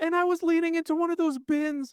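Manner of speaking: put-on very high, upset little boy voice. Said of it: "He was like".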